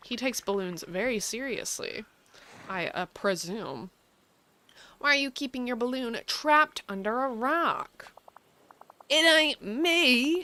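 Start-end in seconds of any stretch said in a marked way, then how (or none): 9.1-10.4 super thick, high southern drawl, stretched "me". Asked why his balloon is trapped under a rock, a character answers in a super southern accent. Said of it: "with a super southern accent".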